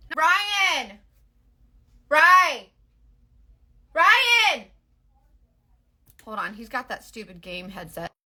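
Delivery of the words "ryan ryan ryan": really loud, high, drawn-out screaming. Calling someone wearing a game headset: screaming really loud. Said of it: "I had to scream really loud".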